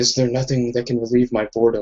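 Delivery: half-whispered voice with an echo. Voicing a half-whisper that the players hear inside their heads: echoing half-whisper. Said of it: "echoing kind of whisper".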